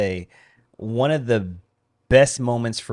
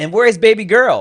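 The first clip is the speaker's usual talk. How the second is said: piercing, very loud, high yell; 11 semitones higher, 9 dB louder than usual. Retelling a shopper calling across registers: imitating a woman yelling. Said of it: "she yells out".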